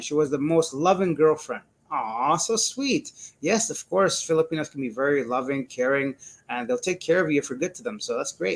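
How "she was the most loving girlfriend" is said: usual speaking voice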